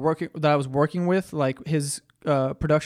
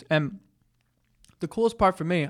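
talking while eating, higher; 3 semitones higher than usual. Telling a story while eating chicken, talking while eating. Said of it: "I'm sorry, I'm eating".

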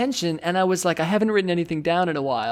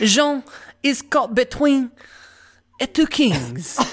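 over-the-top fake French accent, much higher pitch; 5 semitones higher than usual. Urged by another speaker to go full French, in a full-blown French accent. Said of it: "do a full-blown French at this point".

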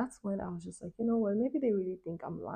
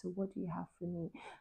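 quiet, low, hushed, low-key voice; 10 dB quieter than usual. Retelling what he said after the bag was opened: imitating a low voice. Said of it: "low-key said to me in a low voice".

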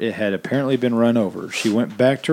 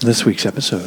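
put-on radio-host whisper, pitched lower; 3 semitones lower than usual. Podcast hosts joke about how their show should sound, doing an NPR-style whisper.

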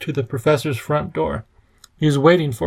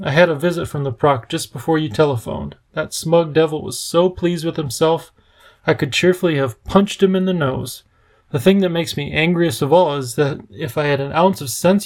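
plain

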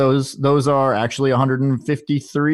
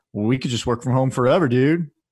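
put-on laid-back dude voice. Quoting a tweet from Twitter's CEO, in an imagined Twitter CEO voice. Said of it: "That's how I imagine him talking".

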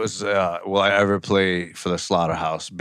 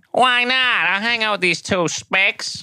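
put-on old prospector-like voice; 13 semitones higher than usual. Joking about Roseanne Barr hanging out with them, speaker does a Roseanne Barr impression. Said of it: "That sounded like an old prospector".

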